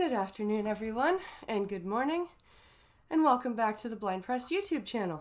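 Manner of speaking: out of breath. Opening a YouTube channel stream, greeting viewers: out of breath. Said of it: "I'm sorry I'm a bit out of breath".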